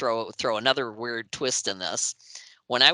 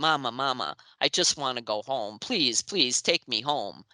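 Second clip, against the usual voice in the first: put-on terrified child voice. Retelling what a frightened boy spirit begged: imitating a terrified kid begging. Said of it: "he sounded so terrified".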